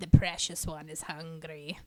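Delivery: low, gravelly, growling rasp. Acting out how she answers when greeted while eating: gravelly growling voice. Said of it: "growls in this gravelly voice like".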